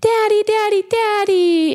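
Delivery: put-on tearful, very high, crying little-girl voice. Retelling a six-year-old girl running up to her smoking father: imitating a crying little girl. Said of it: "And she's crying".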